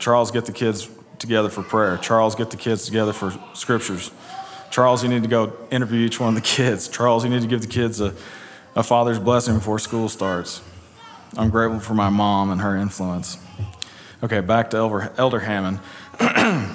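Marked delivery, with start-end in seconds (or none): none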